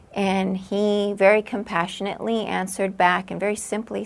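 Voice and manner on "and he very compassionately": ordinary delivery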